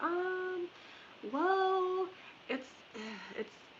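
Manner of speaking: high-pitched, hesitant, stalling delivery.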